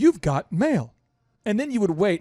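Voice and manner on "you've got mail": canned, recorded computer prompt voice. Recalling old email days, imitating the AOL voice. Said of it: "it used to say".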